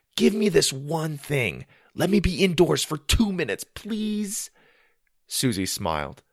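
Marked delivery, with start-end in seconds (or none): 0.2-4.5 earnest, begging, pleading tone, pitched up. Reading a story, a boy asking to choose hockey: pleading. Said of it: "Sawyer pleaded".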